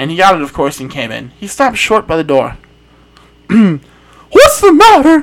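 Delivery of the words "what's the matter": very high, swooping cry. A man stops short at the door and cries out to the narrator: crying out. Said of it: "he cried".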